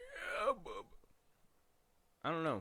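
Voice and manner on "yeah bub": aged-sounding voice pitched very high. Mocking the new trailer's version, imitating Wolverine sounding old. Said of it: "He just sounded old".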